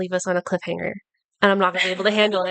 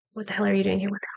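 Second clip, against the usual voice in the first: hushed whisper, quieter; 5 dB quieter than usual. Acting out a character whispering into another character's ear: whispering in character. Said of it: "whisper in his ear and be like".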